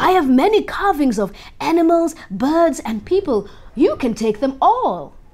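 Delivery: bursting with excitement. Narrating a husband answering his wife's news, excited. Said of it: "he said excitedly".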